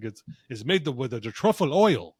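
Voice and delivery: put-on Italian-accented voice. Quoting the man who came out to talk to him, put-on italian accent. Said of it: "he's got the Italian voice".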